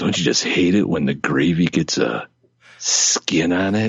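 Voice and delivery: weird, creepy put-on voice. Joking about Thanksgiving drinks: weird creepy Uncle Tickle voice. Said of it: "in that voice, it comes across weird and creepy".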